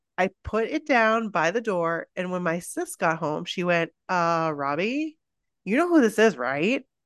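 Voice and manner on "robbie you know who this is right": put-on very sassy teenage voice full of attitude. Reading a letter aloud, quoting the sister's reply: imitating a sassy teenage sister. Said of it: "I tried to capture her very sassy teenage vibe".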